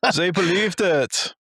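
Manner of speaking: put-on German accent. Acting out the people who drew the mustache, high-fiving: put-on German accent. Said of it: "how long have you been practicing that accent?".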